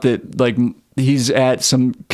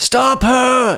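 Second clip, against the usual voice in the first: put-on, high, pitched-up yell; 13 semitones higher than usual. Retelling a story where a man yells at the cops; retelling a yell. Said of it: "he's like yelling at the cops like".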